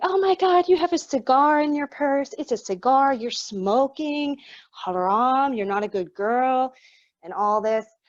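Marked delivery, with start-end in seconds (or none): 0.0-6.7 play-acted, high-pitched screaming, yelling outburst. Retelling how a nosy woman went through her purse, imitating her screaming and yelling. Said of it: "she immediately started screaming and yelling".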